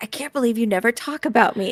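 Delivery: hushed, whispering voice. Voicing a wizard reading from his grimoire: whispering. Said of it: "he's whispering, whispering".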